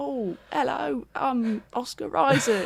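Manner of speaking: put-on overdone Cockney accent, high-pitched and very slow. Mocking an actor's accent in a show: imitating Oscar Isaac's Cockney accent. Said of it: "it's really Cockney".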